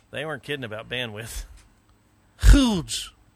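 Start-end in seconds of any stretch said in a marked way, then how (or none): 2.4-3.1 booming, very loud and high emphatic "huge". Saying the word huge as a Trump line. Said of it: "Is that Trump line".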